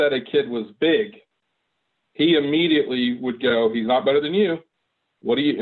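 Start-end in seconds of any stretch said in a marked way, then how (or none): none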